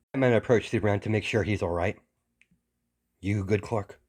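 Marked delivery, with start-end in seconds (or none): 3.2-3.8 quiet, soft voice. Batman checks on Superman after his fall, in a quiet voice. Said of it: "In a quiet voice".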